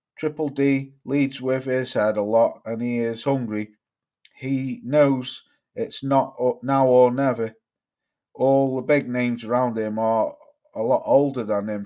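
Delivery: ordinary talk, nothing marked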